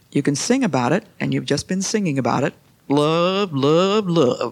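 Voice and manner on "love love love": exaggerated, put-on Texas accent. Echoing how the listeners just said the word, in a put-on Texas accent. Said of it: "with that Texas accent".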